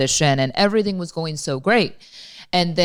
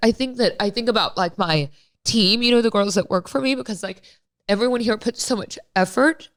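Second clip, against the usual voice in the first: high, tearful crying voice; 6 semitones higher than usual. Speaker talking about the team that helps with an audition, crying. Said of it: "I'm crying".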